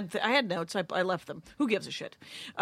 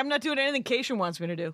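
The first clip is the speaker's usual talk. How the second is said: ordinary talk, nothing marked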